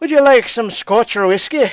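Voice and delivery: put-on accent veering a little into Irish. Showing how an attempted accent drifted: accent slipping into Irish. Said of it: "I almost felt like it was going Irish".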